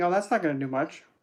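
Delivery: plain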